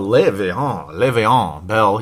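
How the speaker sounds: name said in a put-on French accent. Speaker listing running backs says a player's name in a French accent. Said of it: "You got to have that French accent in there".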